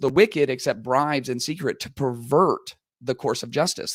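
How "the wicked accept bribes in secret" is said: ordinary delivery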